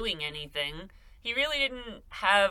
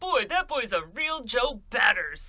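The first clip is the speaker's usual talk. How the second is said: mocking, corny, dorky-sounding delivery; 4 semitones higher than usual. Repeating a quote from Capone to mock it: mocking Capone impression. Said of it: "who talks like that?".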